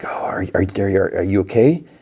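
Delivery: acted-out whisper. Retelling a scene where she finds someone hurt: imitating a whisper. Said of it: "She whispers, like".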